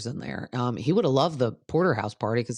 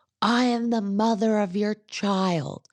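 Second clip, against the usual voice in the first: high mock scream, each word stretched out; 8 semitones higher than usual. Recapping an argument, imitating the woman's screamed reply. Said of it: "She screams".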